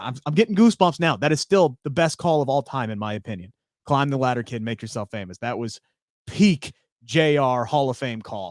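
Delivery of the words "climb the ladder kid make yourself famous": ordinary delivery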